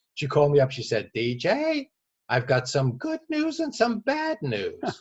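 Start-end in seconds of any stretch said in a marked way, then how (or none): 1.2-4.8 very high, slow, swooping woman's voice. Retelling a call from an executive with news: imitating a woman's voice. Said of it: "I have to do it in her voice because it's funnier that way".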